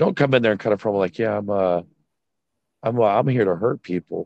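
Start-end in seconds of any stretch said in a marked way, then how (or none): 1.2-4.3 light, offhand, careless, haphazard delivery. Showing how a wrestler should not cut a promo: light, haphazard voice. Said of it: "such a light, haphazard voice".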